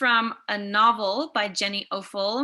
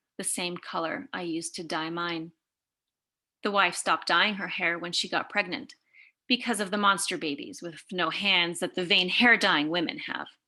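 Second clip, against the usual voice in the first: normal talking voice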